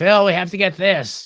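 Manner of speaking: obnoxious, grating woman's voice, high and loud. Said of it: "the world's most obnoxious voice".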